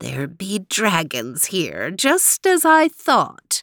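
slow, gentle, contented purring voice. Narrator reads a woman's line as she watches dogs flee a creature, soft purring voice. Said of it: "she said in a soft, purring voice".

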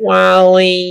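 very high, drawn-out robot voice. Counting down a list, saying the name: WALL-E voice. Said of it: "I can't say it without doing the voice".

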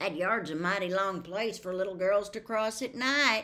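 playful ribbing. Narrator reads Jim's line in the story: teasing. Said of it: "Jim teased".

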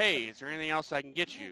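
ordinary talk

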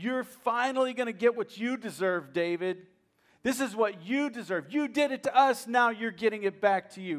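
mock tirade, half-shouted, mild, held-back yelling. Retelling a peasant's curses at King David: imitating someone yelling. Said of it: "He started yelling and screaming".

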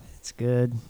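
play-acted so-so, indifferent, noncommittal tone. Recalling the verdict they gave when they came out: mock-lukewarm shrugging tone. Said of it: "I would say it's good with kind of a shrug".

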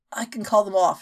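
barely audible, very faint voice. Anne, with a blade at her throat, speaks barely audible. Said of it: "her voice barely audible".

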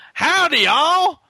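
Western cowboy accent. Reading an email subject line aloud, in an old Western cowboy accent. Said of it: "So I'll read it as an old Western style".

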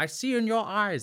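terrible, very high-pitched voice. Quoting a famous movie speech: terrible Aragorn impression. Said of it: "That was a terrible Aragorn impression".

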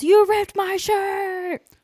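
stretched-out yell, very high-pitched and slow. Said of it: "Nicolas Cage doing his Nicolas Cage voice".

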